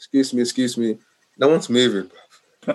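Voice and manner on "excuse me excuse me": mock nice, calm, polite voice. Retelling asking to get off the train: imitating a nice calm voice. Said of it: "nice and calm".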